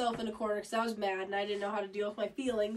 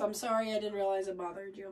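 ordinary talk, nothing marked

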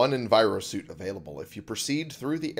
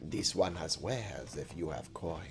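low, cat-like creature character voice; 5 semitones lower, 10 dB quieter than usual. Playing a game, suddenly speaking as a Khajiit: Khajiit voice. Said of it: "I've suddenly become Khajiit".

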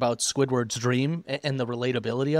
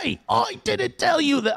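put-on Australian accent, higher pitch; 14 semitones higher, 3 dB louder than usual. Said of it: "I think he's, like, Australian".

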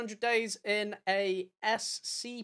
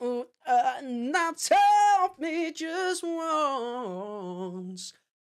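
very slow falsetto, drawn out once, with a voice break; 4 semitones higher, 5 dB louder than usual. Imitating Max from a clip being watched: imitating Max's low falsetto. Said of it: "'cause it's such a low falsetto for a man".

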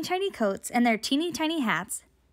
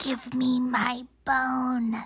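put-on teeny tiny whispered voice, much slower; 2 semitones lower than usual. Reading a story: a voice speaks to the teeny tiny teacher, teeny tiny whisper. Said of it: "a teeny tiny voice whispered".

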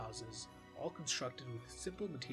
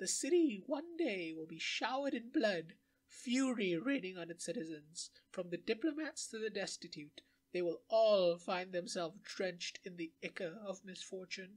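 put-on strange old woman voice, higher and louder; 6 semitones higher, 6 dB louder than usual. In a game, the strange old woman gives her answers: strange old woman voice. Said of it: "The strange old woman had answers".

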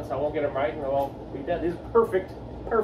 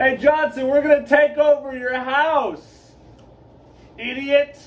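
loud, high taunting shout, house drawn out; 9 semitones higher, 8 dB louder than usual. Barging into Johnson's house to take it over, yelling. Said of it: "Why are you yelling at us?".

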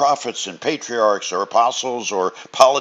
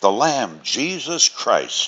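plain

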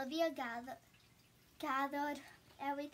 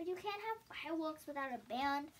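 usual speaking voice

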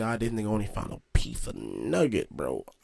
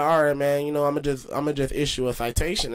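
ordinary talk

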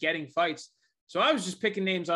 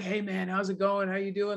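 mock, put-on, overly polite voice; 3 semitones higher than usual. Retelling how d c greeted a fighter: imitating d c being super polite. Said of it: "being super polite to him".

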